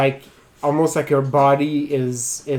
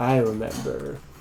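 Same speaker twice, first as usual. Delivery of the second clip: low, hushed creature voice; 2 semitones lower, 6 dB quieter than usual. Storyteller voicing a creature appearing behind a character, low creature voice. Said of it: "you hear a low voice saying".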